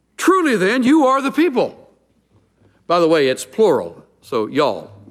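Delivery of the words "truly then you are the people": mocking sarcasm, pitched very high. Retelling Job's reply to his friends: retelling a sarcastic reply. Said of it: "having learned a little sarcasm".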